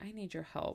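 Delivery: play-acted defeated, deflated, worn-down, beaten voice. Retelling a phone call in which he asked for help: imitating a defeated tone. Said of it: "he sounded so defeated".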